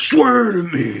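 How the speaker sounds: creaky masked-vigilante voice. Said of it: "I'm always just getting tossed into his voice".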